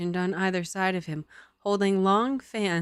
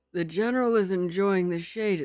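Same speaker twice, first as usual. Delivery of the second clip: put-on old man voice. Asked to do the old man voice again, trying the line in old man voice. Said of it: "Do I have to do the old man voice again?".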